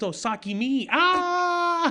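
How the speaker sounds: squeaky, very high, slow, eager pleading, long "ah". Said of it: "jumping in front of them".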